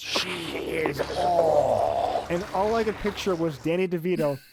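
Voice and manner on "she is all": throaty, guttural, otherworldly creature voice. Speaker quotes a movie alien strangling a man: guttural alien voice. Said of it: "he says in that guttural alien voice".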